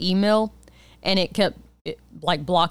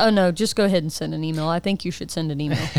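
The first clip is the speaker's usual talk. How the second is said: ordinary talk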